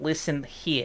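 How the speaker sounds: Jersey-style accent. Showing a podcast audience a favorite phrase in a regional voice; new jersey accent. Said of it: "I very often just dip into what I call New Jersey times".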